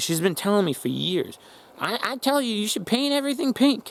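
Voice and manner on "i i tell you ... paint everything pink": very high, silly, teasing, mocking put-on voice. Quoting a woman's long-repeated advice while making fun of her: mocking put-on voice. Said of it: "I don't know why I'm doing that voice and making fun of her".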